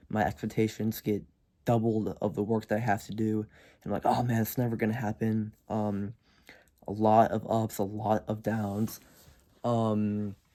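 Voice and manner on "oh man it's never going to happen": normal talking voice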